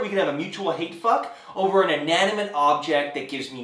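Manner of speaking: ordinary talk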